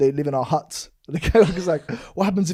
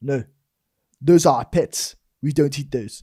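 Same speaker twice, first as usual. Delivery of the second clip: put-on South African accent. Telling a story about a new south african co-worker, quoting him in a south african accent. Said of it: "South African accent".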